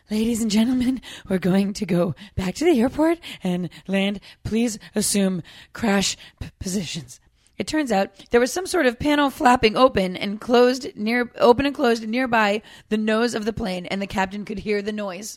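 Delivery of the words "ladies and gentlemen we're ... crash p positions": acted forced calm, panicked, shallow breathing. Reading a listener's story, quoting a flight attendant: imitating a panicked voice trying to sound calm. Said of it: "panicked, trying to sound calm, shallow breathing voice".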